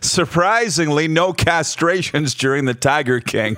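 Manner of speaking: ordinary delivery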